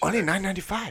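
put-on Chinese accent. Trying out a quick accent before acting a scene: put-on Chinese accent. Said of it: "is that how you do a Chinese accent".

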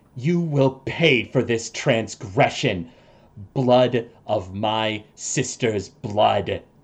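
hissing through the pain. A game master voices a cloaked foe hit by sunlight, hissing in pain. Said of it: "hisses in pain".

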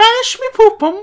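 silly high-pitched yell. Retelling a classroom story, quoting a boy's yell: stupid high-pitched yell. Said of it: "yell in a stupid, high-pitched voice".

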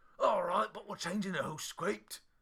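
put-on very loud, high-pitched Scottish accent. Retelling how Mike Myers answered when contacted: Mike Myers doing a Scottish accent. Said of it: "my Mike Myers doing a Scottish accent impression".

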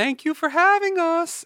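put-on odd, very high, slow little-girl voice. Retelling a radio show ending where a voice thanks them: imitating a weird voice. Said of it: "Who's that weird voice?".

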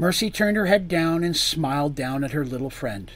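ordinary delivery

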